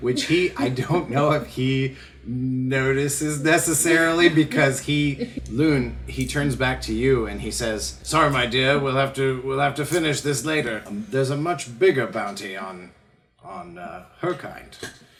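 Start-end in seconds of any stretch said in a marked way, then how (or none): 8.0-14.8 arrogant, superior, haughty, lofty tone. Voicing a character who dismisses a player and turns away: haughty manner. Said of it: "he turns away from you in a haughty manner".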